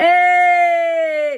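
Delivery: very loud, very high, projected drawn-out call. Coaching someone on vocal projection, demonstrating a loud, projected, not nasal call. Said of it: "it can't be nasally. Hey! Nice and loud. The projection".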